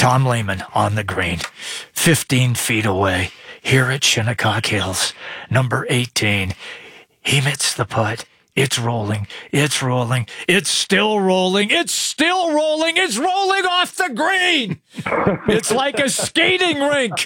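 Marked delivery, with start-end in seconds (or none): 0.0-14.8 very low, swooping golf announcer impression. Speaker does his impression of how golf announcers speak when a putt rolls: golf announcer impersonation. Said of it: "I'm doing my golf impersonation of how they have to speak".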